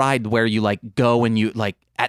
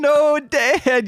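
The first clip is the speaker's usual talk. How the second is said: mock very high, sobbing, pleading crying voice. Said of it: "You're crying like".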